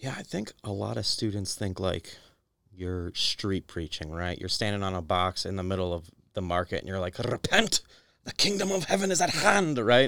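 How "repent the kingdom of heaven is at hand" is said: put-on Scottish accent. Imitating a street preacher standing on a box in the market: Scottish accent. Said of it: "Do you have to have a Scottish accent".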